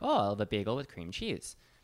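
put-on Wisconsin accent with sing-song tune. Recalling how they talked growing up, in a Wisconsin accent. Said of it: "I'll go back to my old accent from Wisconsin".

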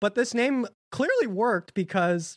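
voice breaking with a pubescent crack mid-line. A podcast host reading the show's credits, voice cracking. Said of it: "I'm not going to say that again without a voice crack".

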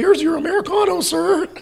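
put-on shrill, very high, loud, drawn-out pimply teen voice. Recalling serving Mickey an Americano, sounding like the pimply-faced kid from The Simpsons. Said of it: "I sounded like the pimply faced kid from The Simpsons".

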